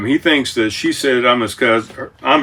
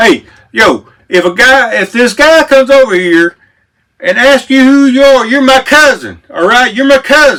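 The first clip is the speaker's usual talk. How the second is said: Memphis way of speaking; 12 semitones higher, 6 dB louder than usual. Retelling what a woman beside him at the table said, in a Southern Memphis accent. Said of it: "real Southern voice, Memphis".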